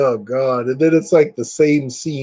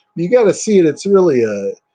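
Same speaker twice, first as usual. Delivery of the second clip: ordinary talk, nothing marked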